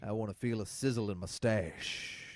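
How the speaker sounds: put-on voice, rough on the throat. Carrying on the bit about bobbing in hot broth, do a Sam Elliott impression, rough on the throat. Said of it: "that's a little rough on the old throat doing Sam Elliott".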